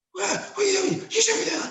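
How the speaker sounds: mock-angry. Showing how they pretend to be angry with their players, mock-angry. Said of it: "so I pretend to be angry with them".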